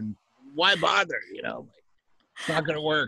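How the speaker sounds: high cartoon clown voice. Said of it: "Do you give him the Krusty voice?".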